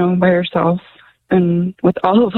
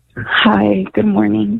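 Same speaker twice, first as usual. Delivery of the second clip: downcast, sad-sounding delivery; 2 semitones higher than usual. A radio caller greets the host, who tells her she sounds sad: sad voice. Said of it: "You sound sad".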